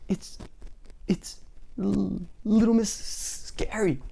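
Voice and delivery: high, trembling, teeth-chattering, frightened stammer. Narrator reads a frightened character answering from under his bed, trembling with fear, teeth chattering. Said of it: "chattered Mister Jelly, trembling in fear".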